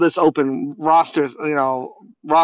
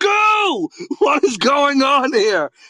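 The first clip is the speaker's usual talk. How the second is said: very high, shrill, wide-swinging, drawn-out acted yell; 10 semitones higher than usual. Recalling Googling a player's name and seeing the pictures, retelling own yell. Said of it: "Sorry for yelling".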